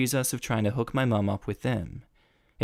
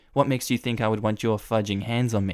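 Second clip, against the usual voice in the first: normal talking voice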